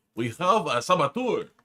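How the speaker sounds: exaggerated, clumsy French accent, spoken slowly. Reading out a described line from a story: bad French accent. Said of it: "in a bad French accent".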